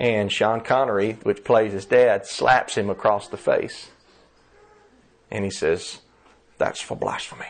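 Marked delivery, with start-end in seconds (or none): 6.6-7.5 weak film-star voice, breathed out in a whisper. Retelling a movie scene where a father slaps his son: bad Sean Connery impression. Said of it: "I don't do a very good Sean Connery impression".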